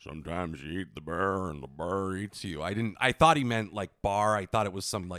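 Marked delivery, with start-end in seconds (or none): 0.0-2.6 low, deep put-on cowboy voice. Quoting a line from The Big Lebowski the way Sam Elliott says it: Sam Elliott impression. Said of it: "the way Sam Elliott says it".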